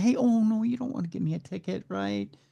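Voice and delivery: fast, slick, smooth-talking voice. Acting out a pulled-over driver talking their way out of a ticket: imitating fast smooth talk to police. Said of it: "we try to talk fast, talk smart".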